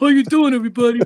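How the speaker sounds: voice of a hand puppet. A puppeteer shows how the puppet Boogie greets everyone: Boogie puppet voice. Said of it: "that's Boogie".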